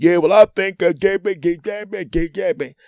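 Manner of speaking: put-on tough-guy bravado, very high and loud. Retelling a guest on the phone with his wife: imitating a mumbling tough guy. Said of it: "He tries to be Captain Tough Guy".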